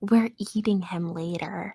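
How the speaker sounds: very low, hushed whisper. As Canary, speaking privately to Cress: Canary whispering. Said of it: "Canary whispers to Cress".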